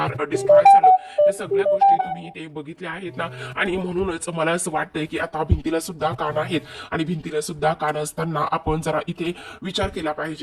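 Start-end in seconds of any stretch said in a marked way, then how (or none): none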